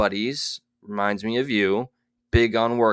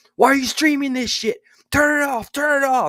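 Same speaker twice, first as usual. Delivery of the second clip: mock, very high, shrieking, raging outburst; 4 dB louder than usual. Retelling how a streamer yelled at fellow podcasters: imitating someone yelling. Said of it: "was yelling at his fellow podcasters".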